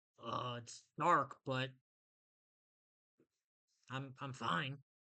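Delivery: put-on low dragon creature voice. Voicing a dragon who answers through a door; dragon creature voice. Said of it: "he pretty much speaks back to you like".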